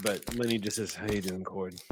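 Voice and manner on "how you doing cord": muttering quietly under breath. Voicing a character still coming to, greeting another character: muttering under his breath. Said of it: "just under his breath".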